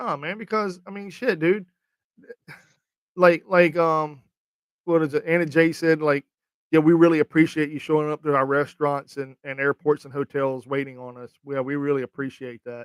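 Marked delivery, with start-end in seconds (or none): none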